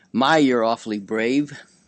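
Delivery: ordinary talk, nothing marked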